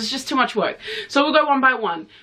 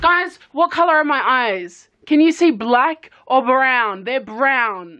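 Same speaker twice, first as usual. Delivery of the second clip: insistent, raised voice; 2 semitones higher than usual. Turning to the camera after an argument over eye color, shouting. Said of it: "Sorry for shouting at the camera".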